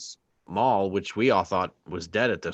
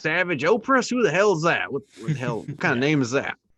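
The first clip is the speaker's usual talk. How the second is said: high-pitched put-on pirate voice; 8 semitones higher, 5 dB louder than usual. Acting out the pirates sounding like someone's uncle: imitating a pirate like someone's uncle. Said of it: "the pirates are like the voice of".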